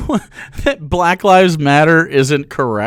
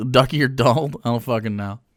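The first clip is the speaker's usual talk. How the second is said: plain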